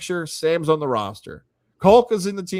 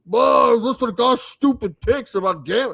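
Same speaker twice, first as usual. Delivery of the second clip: higher-pitched griping, complaining voice; 5 semitones higher than usual. Imitating fans who will blame the team for the starter: imitating a complaining fan. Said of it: "that was a great impression of".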